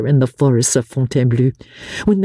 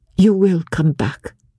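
gentle, tender, affectionate and loving voice. A woman speaks to the man who has just kissed her hand in farewell, tenderly. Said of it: "she said, tenderly".

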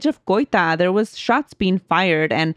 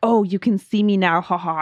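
mock-evil, sinister laughing voice. Retelling a voice heard in a nightmare, retelling an evil laugh. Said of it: "it was like an evil laugh".

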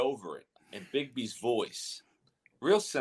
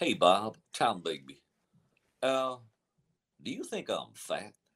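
low-pitched, slow put-on man's voice; 4 semitones lower than usual. Retelling a Sunday call you made to Bob, do the Tom Bigby voice. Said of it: "Bigby's voice".

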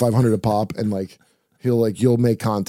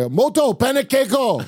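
put-on movie-style yell, much higher pitch. Speaker talks about his girl making pancakes, retelling a yell like Inherent Vice. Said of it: "I yell like Inherent Vice".

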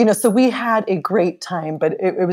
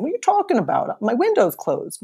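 put-on New York accent, pitched much higher; 7 semitones higher than usual. Retelling asking Donna if she wants In-N-Out, in her big New York accent. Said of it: "her big New York accent".

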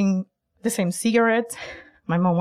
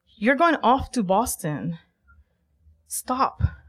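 firm, strong commanding voice; 3 semitones higher than usual. Retelling a moment of telling oneself to stop: imitating own strong inner voice. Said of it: "with my internal strong voice".

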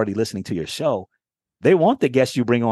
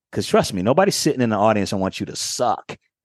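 ordinary talk

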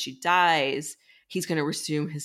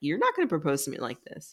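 cheeky, sassy delivery. Retelling a character refusing a marriage proposal: imitating a sassy refusal. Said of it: "She's sassy about it".

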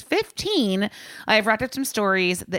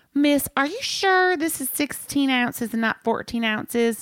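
exaggerated put-on Southern accent, pitched up; 5 semitones higher than usual. Retelling what one of the guys asked the speaker about a glass: Southern accent. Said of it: "I'm just going to go Southern".

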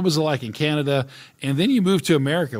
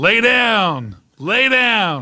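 put-on scream, higher and louder; 6 semitones higher, 5 dB louder than usual. Retelling a karate tournament where the father screamed from the bleachers: imitating a father screaming. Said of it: "my father screaming".

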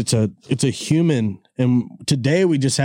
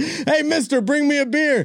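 mock, shrill, very high holler; 14 semitones higher than usual. Picturing a parent watching tv and calling to the kid: retelling a yell across the room. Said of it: "You just yelling".

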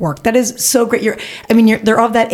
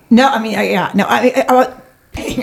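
excited stuttering, stammering, pitched higher; 5 semitones higher than usual. Starting to answer in a group conversation, stuttering with excitement. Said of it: "I'm stuttering 'cause I got so excited".

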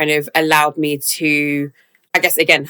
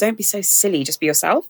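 mock baffled, dismissive, brushing-off tone; 4 semitones higher, 4 dB quieter than usual. Retelling a supervisor's reply about not fitting in: imitating a dismissive tone. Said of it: "in a really, like, dismissive way".

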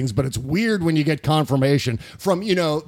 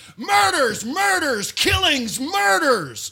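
shrill, high, drawn-out, deliberate acted ranting yell; 12 semitones higher than usual. Retelling a rally clip of Donald Trump: imitating Donald Trump yelling. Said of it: "he's literally yelling".

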